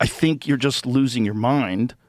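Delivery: plain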